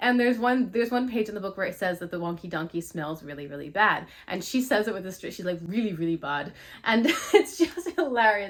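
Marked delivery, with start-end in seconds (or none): 5.6-6.5 put-on heavy Scottish accent, old woman voice. Quoting a grandmother reading a book to her grandchild, imitating heavy Scottish accent. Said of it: "she's reading it with this heavy Scottish accent".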